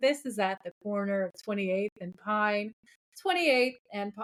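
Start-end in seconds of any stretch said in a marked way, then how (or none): 0.0-2.7 put-on police radio dispatcher voice. Retelling a TV scene, imitating a radio dispatcher voice. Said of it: "do the voice on the radio".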